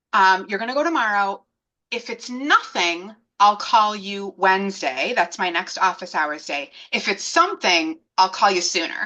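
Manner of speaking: plain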